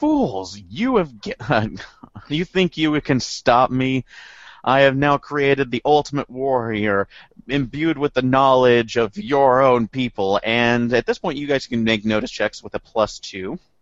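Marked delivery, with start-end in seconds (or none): 0.0-10.4 put-on character voice, laughing, slower. Describing what the players hear, voicing Dr. Shinka: Dr. Shinka laughing while speaking. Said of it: "Dr. Shinka laughing and saying".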